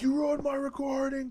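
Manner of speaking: put-on, very high-pitched furious yell. Retelling yelling at their sister who barged into a recording, a retold furious yell. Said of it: "I was furious".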